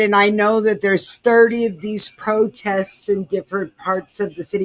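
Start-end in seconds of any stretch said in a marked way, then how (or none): none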